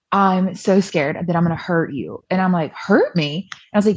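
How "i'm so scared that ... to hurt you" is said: put-on sobbing, acted-out crying. Acting out what they said back then while upset: retelling sobbing. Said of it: "I'm sobbing, I'm crying".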